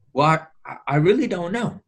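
mock unsure, hesitant reply. Telling a story, voicing her reply to the cat, mimicking a hesitant voice. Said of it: "she responds in a rather hesitant voice".

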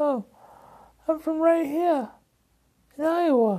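very high put-on English accent. Acting out a man's answer in a retold conversation, imitating an English accent. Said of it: "Why do you have an English accent?".

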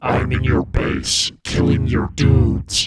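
deep, slow tritone, like three voices at once. Quoting what the kid keeps saying in the game, in his deep tritone voice. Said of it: "he keeps going in his deep tritone voice".

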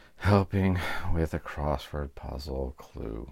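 gentle, soft, low, hushed delivery. Asked to say the segment name more softly, said more softly. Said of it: "Can you say it more softly?".

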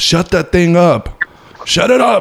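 very high yell with pitch climbing. Retelling someone yelling in the middle of a movie, acting out the yell. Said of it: "He just yelled in the middle of the movie".

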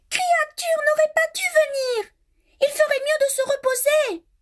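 sudden, very high crying exclamation. Narrator reads a character's words as she looks at another; crying out. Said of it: "en s'écriant".

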